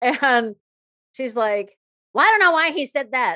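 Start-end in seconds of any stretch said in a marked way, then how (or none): 2.1-3.4 mock snooty, dismissive, snotty tone, high and raised. Retelling a woman brushing off the underwear errand, imitating a snotty tone. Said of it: "in that snotty ass tone of voice".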